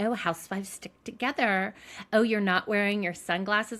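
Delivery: snide, smug, self-satisfied, catty needling tone. Retelling a contestant's remarks to the housewives: imitating a smug catty tone. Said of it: "he was like a smug little bitch".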